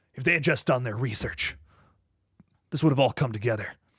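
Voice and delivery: big, fast, theatrical, dramatic movie-style delivery. Rereading a quoted line as if a character in a movie, dramatic movie-character read. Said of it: "given a real dramatic read".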